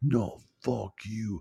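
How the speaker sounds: fed-up, furious, angry, pissed-off tone. Retelling a movie ending where a character gets pissed off: imitating someone pissed off. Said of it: "she just gets pissed off and she's like".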